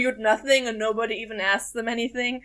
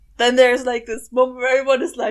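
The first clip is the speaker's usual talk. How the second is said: ordinary talk, nothing marked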